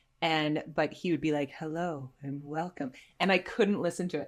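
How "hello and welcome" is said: soft, silky, smooth podcast-host voice. Describing a friend's meditation podcast, imitating Joe's smooth voice. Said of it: "hearing him like talk so smooth".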